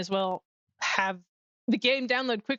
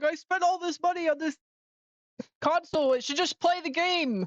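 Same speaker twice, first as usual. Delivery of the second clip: put-on angry, worked-up rant, pitched up; 8 semitones higher than usual. Retelling someone's reaction to a slow game download: imitating someone angry. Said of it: "He got so mad".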